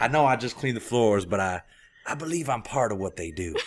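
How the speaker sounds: accent drifting into put-on janitor accent. Joking about taking on a janitor's accent from the job, put-on janitor accent. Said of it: "Now your accent's changing".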